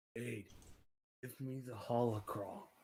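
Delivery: hushed half-whisper under the breath. Acting as his character, turning to speak to her: half-whispering. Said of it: "He whispers to her".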